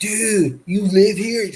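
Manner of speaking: laid-back, high surfer dude drawl, very drawn out. Retelling a college student customer at his grocery store job, typical surfer dude voice. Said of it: "Typical surfer voice".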